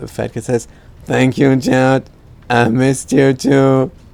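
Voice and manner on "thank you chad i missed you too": loud, flat, level, mechanical robot voice. Retelling what Fat Cat says back to Chad, in a robot voice. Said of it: "in a robot voice".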